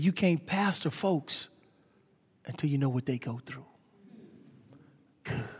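quiet, raspy put-on voice. Retelling what a pastor said on a phone call about his mother, imitating his raspy voice. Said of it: "He had this raspy voice".

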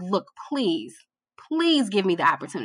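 mock-begging, acted pleading tone. Retelling an email sent asking for the opportunity, retelling own begging. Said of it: "I was begging".

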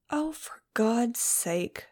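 very slow, drawn-out, muttered under the breath. Reacting to a companion's sad talk about life being short, muttered. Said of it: "I muttered".

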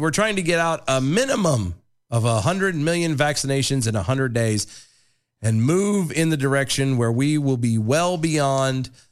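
ordinary talk

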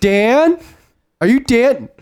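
very high, drawn-out yell carrying across a room. Retelling how a girl at a bar called to an old guy: imitating a yell. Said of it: "She starts yelling across the bar".

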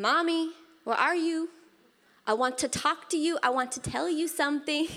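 put-on high little-girl voice, calling out. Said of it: "she yells from her mo-, room".

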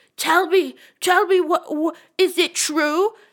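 high, loud, repeated shouting outburst. Mocking a TV character who confronts people: imitating Clay yelling.

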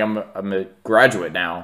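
ordinary talk, nothing marked

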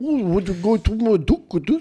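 thick fake New Zealand accent. Retelling how a couple sounded: imitating a thick New Zealand accent. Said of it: "if you try and speak New Zealand".

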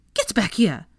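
annoyed huffing. Molly, annoyed, before storming out of the pub; huffy and annoyed.

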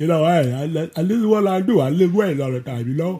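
weak bodybuilder voice, stumbling over the words. Doing a requested impression of Lou Ferrigno: Lou Ferrigno voice. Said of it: "do a Lou Ferrigno voice".

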